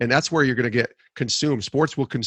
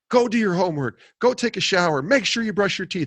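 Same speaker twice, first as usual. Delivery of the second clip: play-acted, high-pitched angry dad yelling; 7 semitones higher than usual. A father retells screaming orders at his daughter after the game, retelling angry screaming. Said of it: "I was screaming it like I was the angry".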